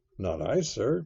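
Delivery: plain reading voice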